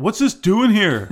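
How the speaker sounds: high, loud, dim, dopey put-on voice. Imitating the few people who ask what it is doing here: dumb-sounding put-on voice. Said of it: "I'm saying it in a dumb voice".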